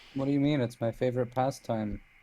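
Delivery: ordinary talk, nothing marked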